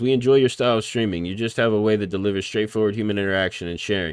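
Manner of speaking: plain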